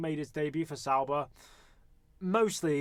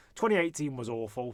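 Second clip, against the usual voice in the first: plain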